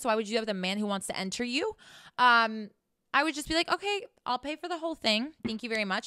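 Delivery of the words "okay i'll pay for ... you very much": ordinary talk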